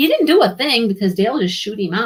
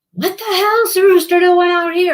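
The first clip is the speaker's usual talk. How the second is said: mock sudden yell, very high and shrill; 10 semitones higher than usual. Retelling how someone suddenly yelled about a rooster: imitating Dale yelling. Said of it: "Dale's yelling, and he's like".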